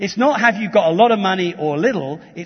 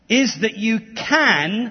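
slow, heavy stress on can. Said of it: "and I emphasize the word can".

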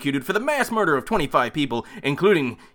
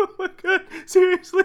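high, laughing voice, words broken by laughter; 14 semitones higher than usual. Reacting after hearing a terrible recorded line, laughing. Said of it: "I'm laughing".

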